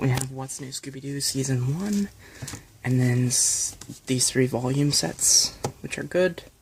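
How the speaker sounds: hushed whisper. Going through tv series box sets while someone else is nearby, whispering. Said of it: "I'm sorry I'm whispering".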